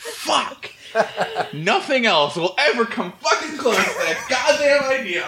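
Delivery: very high, jokey, playfully furious rage yelling outburst. Reacting to an idea just said on the podcast, the speaker bursts out mock-angry. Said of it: "I'm so mad".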